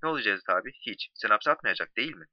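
ordinary delivery

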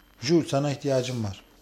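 ordinary delivery

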